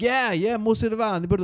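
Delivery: exaggerated fake Italian accent, very high, very drawn-out. Retelling joining in a friend's rant with more Italian: exaggerated put-on Italian. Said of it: "So we're done with the Italian".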